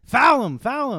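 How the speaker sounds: mock coach yelling. Riffing with a friend about coaching a team, a speaker does pretend coach yelling. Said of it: "I'm over there yelling at you".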